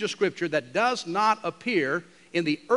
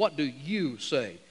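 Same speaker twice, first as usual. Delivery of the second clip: snarling tone; 3 semitones lower, 3 dB quieter than usual. Reading a scripture verse aloud, acting out the accusers' question in a mock snarling tone. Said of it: "Kind of a snarling tone".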